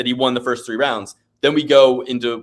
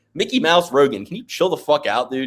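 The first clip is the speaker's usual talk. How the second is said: plain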